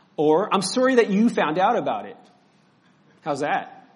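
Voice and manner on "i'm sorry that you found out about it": defensive, apologetic, pitched-up tone. Showing how a defensive apology sounds: defensive apology. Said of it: "apologies sound like this".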